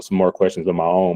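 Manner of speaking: ordinary delivery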